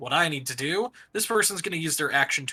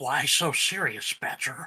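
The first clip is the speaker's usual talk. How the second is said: put-on villain voice; 3 semitones lower than usual. Having just compared the sound to the Joker, ask Badger the question in Heath Ledger's Joker voice. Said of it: "Like Heath Ledger's Joker right there".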